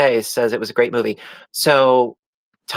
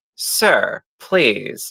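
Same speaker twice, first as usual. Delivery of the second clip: mock snarky English butler voice. Retelling how a show's manservant talked: imitating a snarky English-accented manservant. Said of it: "he was snarky and he was just like".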